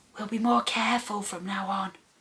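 hushed, soft half-whisper, barely breath. The narrator speaks to him as he stops shivering under her hand, half-whispered. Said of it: "I whispered".

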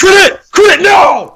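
frustrated yell, very loud and very high. A player reacts as an attack lands in a game, loud shouting. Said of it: "I'm going to blow out 2 mics".

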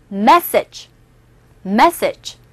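message with a stressed first syllable, light ending. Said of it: "해보세요".

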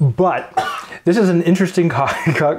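giggling, breaking up mid-word, stumbling words. Introducing a cocktail called Sex Under the Sun, laughing while talking. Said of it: "I can't do this with a straight face".

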